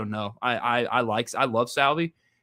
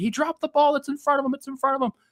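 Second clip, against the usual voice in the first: mock yelling pitched very high and shrill; 13 semitones higher than usual. Retelling how a friend at the game yelled at people: imitating a friend yelling. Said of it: "I'm yelling at people".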